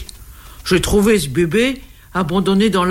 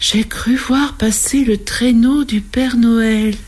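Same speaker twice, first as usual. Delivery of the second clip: slow, dreamlike storybook voice; 4 semitones higher than usual. The lady at dinner speaking to the gentleman, in a dreamy voice. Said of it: "La dame dit avec une voix de rêve".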